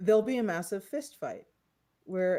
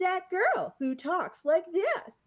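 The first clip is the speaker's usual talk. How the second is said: very high synthetic text-to-speech robot voice; 9 semitones higher than usual. Imitating abusive text-to-speech messages read on a stream: put-on robot voice. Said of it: "that robot voice that's like".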